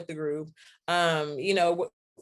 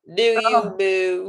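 Baltimore accent, loud; 3 semitones higher, 8 dB louder than usual. Repeating a phrase for the group, talking in a Baltimore accent. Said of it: "I'm talking like someone from Baltimore".

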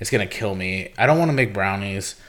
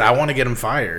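ordinary delivery

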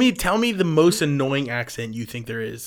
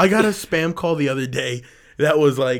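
plain

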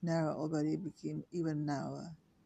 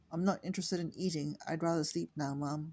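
plain

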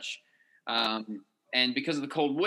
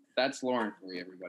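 usual speaking voice

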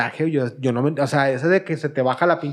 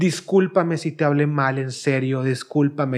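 normal talking voice

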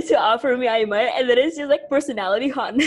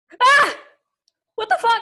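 very high, thrilled, excited yelp; 9 semitones higher, 3 dB louder than usual. Reacting to a submission being announced: yelling in excitement. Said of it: "I know that I'm, like, yelling".

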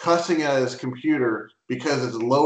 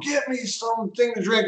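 put-on play-acted very high, demanding kid's scream; 9 semitones higher, 3 dB quieter than usual. Retelling a recorded video of a kid and his mom: imitating a kid screaming. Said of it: "screaming at his mom".

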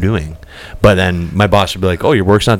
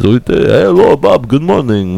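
put-on Russian accent, pitched up; 7 semitones higher than usual. Telling a story about your maintenance manager: imitating Sergey's Russian accent. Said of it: "it talks like this".

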